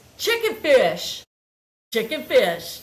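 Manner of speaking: emphatic, loud, forceful insistence with swooping pitch. Retelling how Jace answered what's for dinner: imitating Jace's forceful reply. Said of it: "the way he said it so forcefully".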